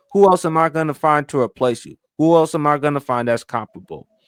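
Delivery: ordinary talk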